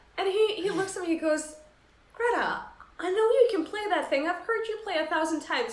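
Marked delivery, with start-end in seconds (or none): 2.1-5.7 put-on plummy, upper-class posh British accent. Greta retells what a man said to her, in a posh british accent. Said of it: "in his like you know posh British accent".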